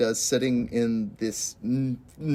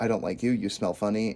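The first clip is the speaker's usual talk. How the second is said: put-on expressionless, level deadpan monotone; 2 semitones lower, 3 dB quieter than usual. Recapping a scene for viewers, retelling what she says, retelling a deadpan line. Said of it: "and you're like deadpan".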